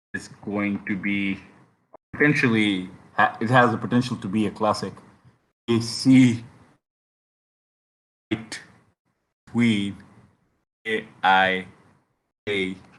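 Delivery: very slow, halting, broken-up phrasing. Previewing the next tournament fight, talking very slowly. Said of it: "why am I talking so slow?".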